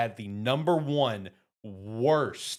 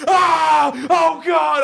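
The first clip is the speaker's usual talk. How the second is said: put-on terrified scream, higher and louder; 14 dB louder than usual. Retelling playing a scary game beside someone: imitating someone screaming in terror. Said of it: "I'm screaming bloody murder".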